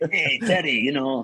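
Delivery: attempted, put-on French accent. Terry retelling what Eric said to him in the tunnel, Eric's French accent. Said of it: "can I do a French accent?".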